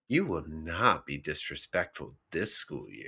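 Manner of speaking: very low, deep, hushed movie-trailer voice. Showing the others how a line should be read: read like a tagline. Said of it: "You have to read it like a tagline".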